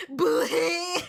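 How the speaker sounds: very loud, high-pitched anime-style shout. Repeating a word for a laugh: anime way. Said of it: "I gotta do it the anime way".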